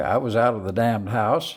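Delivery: ordinary talk, nothing marked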